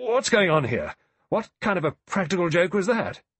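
loud, high-pitched, spluttering outburst. A narrator reads a general reacting to an unseen voice; spluttering. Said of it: "spluttered out".

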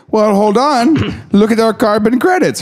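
very high, rough, guessed put-on Swedish accent. Joking about countries wanting credit for climate action, the speaker voices Sweden in a Swedish accent. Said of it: "or whatever a Swedish accent sounds like".

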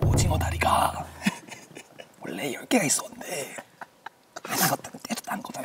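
soft, whispered, put-on impression voice.

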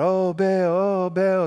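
slow, drawn-out wailing cry. Retelling a bible story where worshippers call on baal: imitating people crying out. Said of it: "they're crying out".

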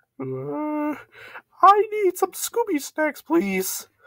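strange squeaky voice, very high, very slow and drawn-out. A customer ordering at Olive Garden in a skit, in a weird-sounding voice. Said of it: "your voice sounds really weird".

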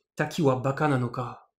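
final ka dropped low with falling pitch. Explaining Japanese sentence endings, pitch falls on final ka. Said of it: "quand on a un cas et que l'on baisse bien l'intonation en fin de phrase".

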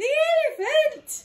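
astonished, surprised cry, high and loud. Narrator reading the children's line in a story, a surprised exclamation. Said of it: "Exclaimed the children in surprise".

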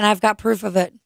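ordinary delivery

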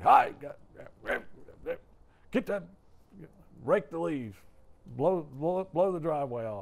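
loud barking yell, acted. Imitating a dad waking houseguests at six thirty: imitating Big Irv yelling. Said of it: "It was like he was always yelling".

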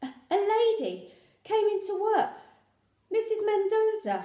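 very high, slow, out-of-breath puffing. Mum, having run in, tells the narrator who came into work; puffing, out of breath. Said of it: "Mum puffed".

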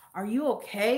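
concerned, worried tone, acted out. Retelling how a guy following in the store asked: imitating a concerned tone. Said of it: "he was concerned for my life".

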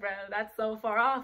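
ordinary delivery

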